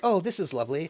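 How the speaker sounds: pleased, delighted, contented robot voice. Voicing Dionysus after drinking the wine: happy robot Dionysus voice. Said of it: "gives this happy, like".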